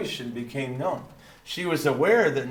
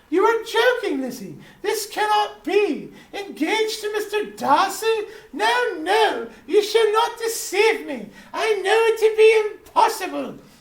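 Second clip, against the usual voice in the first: put-on British accent, pitched very high; 6 dB louder than usual. Dad reading a novel aloud, voicing a character's reply in a British accent. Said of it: "I didn't know I could do a British voice".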